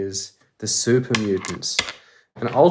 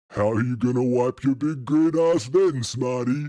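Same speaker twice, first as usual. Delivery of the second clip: rough, gruff brute mutant voice; 2 semitones higher than usual. Narrator reads one super mutant taunting another, in a gruff mutant voice. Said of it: "The gruff voices of the mutants".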